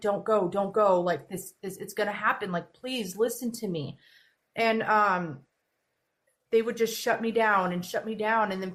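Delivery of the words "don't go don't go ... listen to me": put-on tearful, crying pleading tone. Retelling what they said to people back then, imitating own past crying plea. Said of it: "cry because I'm like".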